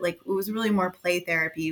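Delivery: ordinary talk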